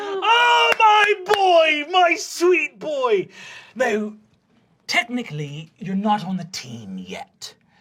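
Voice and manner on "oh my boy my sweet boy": very loud, very high, slow, drawn-out thrilled cry. Narrating as he hands you the team letter jacket, loud and excited. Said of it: "[loud, excited]".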